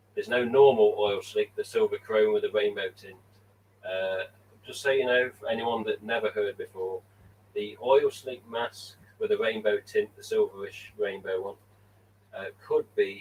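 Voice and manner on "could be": "could be" said with strong stress. Telling viewers a mask might return: stress on COULD BE. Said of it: "and I emphasize the word could be".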